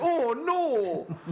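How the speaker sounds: put-on high yelp in a strong Canadian accent. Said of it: "the guy goes".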